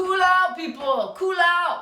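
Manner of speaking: high, loud, drawn-out, stretched-out shout. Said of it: "it's supposed to be Mick Jagger".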